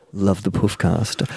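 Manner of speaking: hushed, under-the-breath sotto voce aside. Retelling Dad's work friend's aside during a handshake, hushed sotto voce. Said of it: "like, sotto voce".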